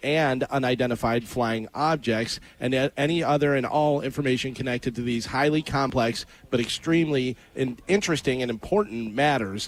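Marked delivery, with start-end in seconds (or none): none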